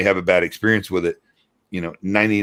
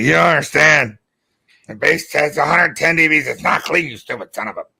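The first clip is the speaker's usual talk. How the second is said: mock tipsy, boozy, pitched-up drunk voice; 8 semitones higher, 4 dB louder than usual. Imagining how Matt would talk if he drank: imitating a drunk Matt. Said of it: "if Matt, Matthew would drink, he'd be like".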